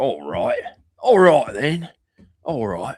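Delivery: loud, high, fake put-on Australian accent. Speaker digging into an accent while chatting, put-on Australian accent. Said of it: "I'm kind of digging into Aussie here".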